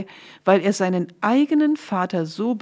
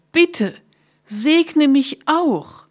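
terrible, high, loud screaming outcry; 6 semitones higher, 4 dB louder than usual. Esau begs his father Isaac for a blessing, screaming loudly. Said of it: "schrie Esau".

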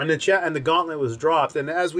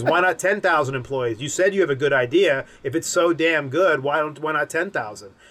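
plain

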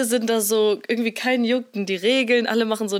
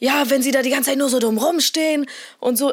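acted, mock-aggressive voice; 3 semitones higher than usual. Retelling an argument with another driver, acting out own aggressive reply. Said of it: "ein bisschen aggressiver geworden und meinte so".

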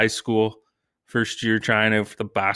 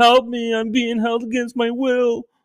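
put-on very high, shrill kid's yell from a distance; 14 semitones higher, 4 dB louder than usual. Parent retells his kid calling from his room as police arrive; imitating his kid yelling. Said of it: "my kid starts yelling from his room".

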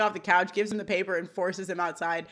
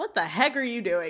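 plain

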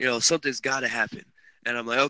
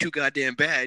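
put-on yelling; 2 semitones higher than usual. Retelling how the manager at the time yelled about the shortage: imitating a manager yelling. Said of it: "yelling at me, like".

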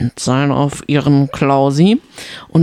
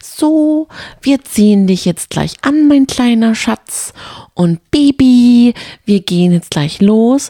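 put-on high-pitched babyish speech; 8 semitones higher, 4 dB louder than usual. Retelling how she spoke to Roland before the game: imitating baby talk. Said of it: "hat sie so in Babysprache mit Roland geredet".

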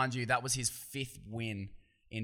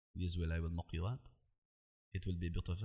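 deep, fast, bad put-on French accent; 5 semitones lower, 6 dB quieter than usual. Quoting a french opponent, terrible french accent. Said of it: "Terrible French accent".

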